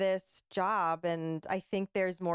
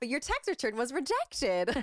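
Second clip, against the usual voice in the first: put-on overly cheerful voice, higher; 7 semitones higher than usual. Retelling reading a rejection message for a phone system: imitating own overly happy read. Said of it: "doing it so happy".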